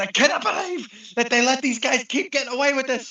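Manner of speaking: high-pitched, disgusted outburst.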